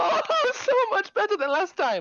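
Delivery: very high, loud, swooping thrilled exclamation. Voicing a character who leaps up from her chair: excited character voice. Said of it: "leaps up excitedly and goes".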